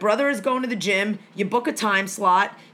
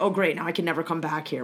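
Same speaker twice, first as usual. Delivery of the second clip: deeply embarrassed, mortified tone; 5 semitones lower, 5 dB quieter than usual. Retelling a supermarket confrontation, imitating mom, embarrassed. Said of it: "My mom was mortally embarrassed".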